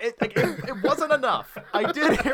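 laughing speech.

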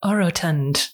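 audio-dictionary-style pronunciation of "orotund". Saying the word of the episode like the lady on Merriam-Webster: imitating the Merriam-Webster lady. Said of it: "I'm gonna say it like the lady on Merriam-Webster".

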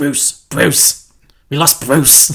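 put-on heavy Cockney accent, spoken nice and slow. Quoting how an actor says the name Bruce, Sean Pertwee Cockney accent. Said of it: "It's that Cockney accent, I just love it".

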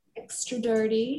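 put-on American accent, done for show. Describing a dream drink order, in a put-on american accent. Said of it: "That's my American accent for you guys".

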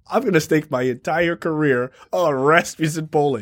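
plain

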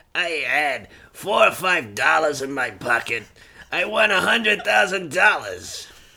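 very deep, low street hustler voice. Impersonating a pool hustler bragging about winnings: impersonating a pool hustler. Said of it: "That's a good impression".

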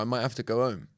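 usual speaking voice

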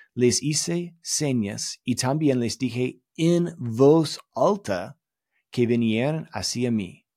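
slow, imperfect, bad non-native Spanish accent. Recalling a talk heard in Mexico, the speaker quotes a Spanish verse, poor Spanish accent. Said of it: "please pardon my poor Spanish accent".

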